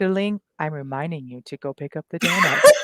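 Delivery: gentle, softly spoken, like a device talking. Describing a forgotten device speaking in the dark house: imitating a gentle voice. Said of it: "Like all gentle like that?".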